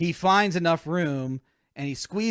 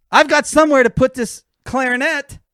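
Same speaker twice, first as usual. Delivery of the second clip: mock shouting, much higher pitch and louder; 8 semitones higher, 8 dB louder than usual. Retelling what Dale said on the aircraft; imitating Dale shouting. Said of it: "the volume in which Dale is shouting".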